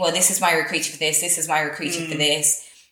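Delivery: ordinary talk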